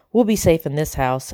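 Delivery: ordinary delivery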